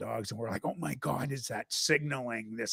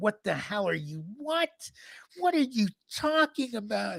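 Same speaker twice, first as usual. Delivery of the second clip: very high, shrill, shrieking scream; 10 semitones higher, 3 dB louder than usual. Retelling how a friend's mother reacted to their story: imitating someone screaming. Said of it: "she starts screaming".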